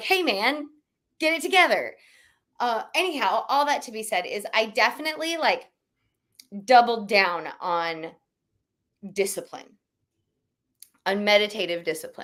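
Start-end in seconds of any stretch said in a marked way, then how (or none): 0.0-2.0 put-on firm, no-nonsense stern tone, pitched up. Recalling an inner voice telling them to focus, mock-stern voice. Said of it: "have a kind of a stern voice be like".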